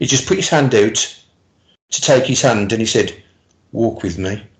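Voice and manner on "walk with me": tender, soft, gentle, quiet voice. Retelling a man holding out his hand, in a soft, gentle voice. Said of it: "his voice was so soft and gentle. And uh, I'll try and do the voice".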